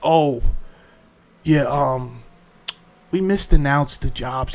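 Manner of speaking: imitated quiet voice. Speaker mimicking them quietly correcting the job numbers: mimicking a quiet admission. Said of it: "they quietly say".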